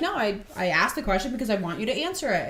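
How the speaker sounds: normal talking voice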